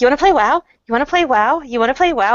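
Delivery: put-on annoying, pestering, repetitive little-kid voice. Retelling asking everyone to play WoW, imitating an annoying little kid. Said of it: "I feel like that really annoying little kid".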